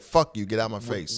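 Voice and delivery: ordinary delivery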